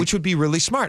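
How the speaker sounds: normal talking voice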